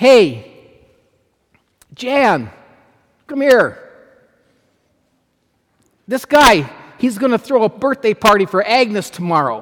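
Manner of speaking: put-on rowdy, hearty, boisterous voice. Retelling how Harry called Jan over about a birthday party, Harry's boisterous voice. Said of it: "in his boisterous voice".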